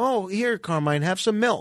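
plain

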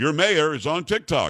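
plain

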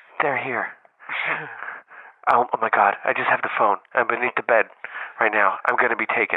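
rushed, hushed, rattled-off whisper. Imagining calling a wife from under the bed, imitating a quiet whisper. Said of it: "I'm gonna like whisper into it real quietly".

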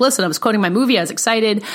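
ordinary delivery

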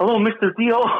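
very high-pitched, trembling, nervous, starstruck tone. Retelling answering a phone call from someone he's the biggest fan of, shaking with nerves. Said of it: "I like started shaking".

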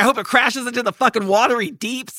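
furious, worked-up, ranting cursing tirade. Retelling a film scene of an old lady watching a plane take off, imitating an angry tirade. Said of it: "she goes on this tirade".

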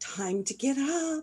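high, slow, soft little voice.

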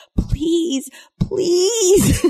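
put-on very high little pleading voice. Retelling a man covering his ears as a woman screams, imitating him pleading. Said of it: "he's like literally pleading with her".

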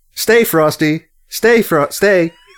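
slow, high-pitched, drawn-out voice. Retelling an actor's misread line: imitating telling a dog to stay. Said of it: "intoning it as if they were instructing a dog".

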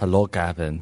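put-on Russian accent. Retelling a story where Natalie Portman greets Gavin, in a Russian accent. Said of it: "she says to him in a Russian accent".

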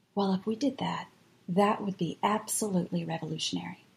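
very quiet, hushed, soft voice. Speaker recounting what a churchgoer said at the end of a video, very quiet voice. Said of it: "in a very quiet voice".

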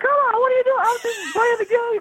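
shrill, squeaky, very high-pitched yelling voice. Mocking a guy who yelled at the referee, imitating his high-pitched yelling. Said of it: "a very high pitched yelling voice".

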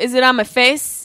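ordinary delivery

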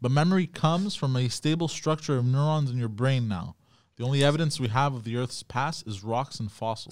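plain

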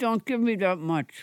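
out of the mouth's corner. Retelling busking when someone put a dollar in the hat: out of the corner of the mouth. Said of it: "I would just move the corner of my mouth, and I'd go".

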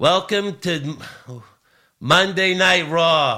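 put-on New Jersey accent. Recalling a bad wrestling announcer's introductions, in a fake New Jersey accent. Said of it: "from New Jersey".

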